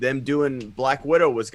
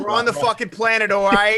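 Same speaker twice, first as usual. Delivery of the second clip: put-on Boston accent, higher and louder; 9 semitones higher, 6 dB louder than usual. Joking about the Dune movie in a Boston accent. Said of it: "You do do a good Boston".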